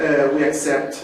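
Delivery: normal talking voice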